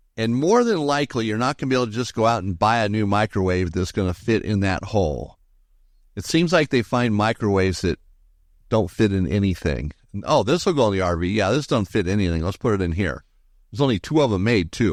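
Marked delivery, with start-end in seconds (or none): none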